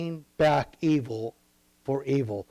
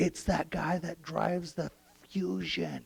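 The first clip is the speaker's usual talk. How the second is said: hushed whisper, quieter; 7 dB quieter than usual. Acting out a friend naming who keyed the car: whispering. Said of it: "Cody whispers in your ear".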